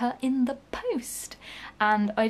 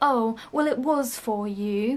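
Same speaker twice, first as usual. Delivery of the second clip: put-on condescending, patronising tone. Recounting an email mix-up, mimicking her patronising voice. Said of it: "in that patronising voice".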